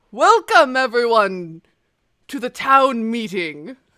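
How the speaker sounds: booming, very loud voice. Voicing a levitating sage who welcomes everyone to the town meeting: booming voice. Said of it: "this booming voice".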